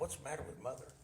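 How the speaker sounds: put-on, barely audible, hushed, sobbing through tears. Retelling own question on the phone to father: retelling own crying words. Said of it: "I'm bawling like a baby still".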